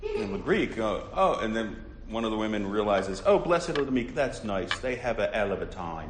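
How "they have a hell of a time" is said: put-on English accent. Quoting a woman's line from a movie: English accent. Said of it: "as she says in her English accent".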